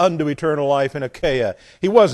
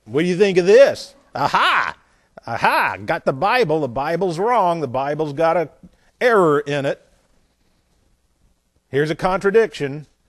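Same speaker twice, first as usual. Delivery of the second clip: mock smug, sneering, gloating know-it-all tone. Speaker acts out people who claim 1 Corinthians 16:15 shows a Bible error, in a mock-snide voice. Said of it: "they will do this usually very snidely".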